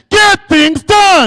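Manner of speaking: very loud, high-pitched, full of conviction. Leading an audience to repeat a phrase after him, with conviction. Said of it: "say this after me with conviction".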